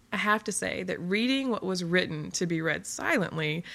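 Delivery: ordinary delivery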